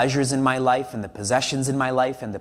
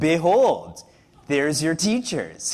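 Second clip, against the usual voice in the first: sly, swooping, understated, put-on sarcastic tone; 3 semitones higher than usual. Retelling what Krishna tells Prince Arjuna between the armies: imitating Krishna's subtle sarcasm. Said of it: "such sarcasm without overtly speaking sarcasm".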